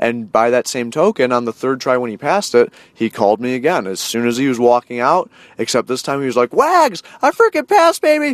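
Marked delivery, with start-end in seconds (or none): 6.5-8.3 thrilled, all excited, very high-pitched exclaiming. Retelling a phone call after passing the test on the third try: imitating someone all excited. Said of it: "all excited".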